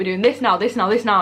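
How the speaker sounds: plain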